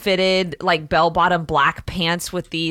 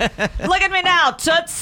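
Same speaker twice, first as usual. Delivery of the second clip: put-on very high, old-time transatlantic lilt; 12 semitones higher than usual. Someone who makes a living doing weird voices shows one: 1940s transatlantic accent. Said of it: "in my transatlantic accent".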